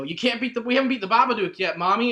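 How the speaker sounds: sudden, high-pitched, loud yell. Retelling a movie scene where the character yells: imitating Sam yelling. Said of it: "Sam yells".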